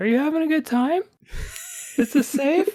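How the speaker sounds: very high head-voice falsetto, swooping. Imitating someone who looks back to check on you: falsetto voice. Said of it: "like in a falsetto voice".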